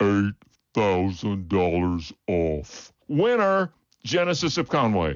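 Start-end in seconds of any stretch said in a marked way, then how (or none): 0.0-2.9 slow-motion delivery, much lower pitch. Replaying the big play on the GV80 price again, slow-motion replay. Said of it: "Let's hear it again in slow motion".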